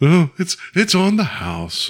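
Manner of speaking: high, sing-song, swoopy cartoon bear voice. Imagining a cartoon bear saying the show's lines, in a Winnie the Pooh voice. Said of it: "I wish I could do Winnie the Pooh's voice".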